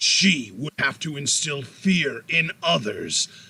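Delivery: dramatic trailer narration with a shouted opening. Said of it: "I'm gonna do my movie trailer voice".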